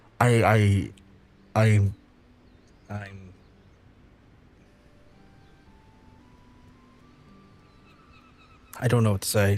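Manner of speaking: voice on the verge of tears. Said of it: "I'm about to start crying".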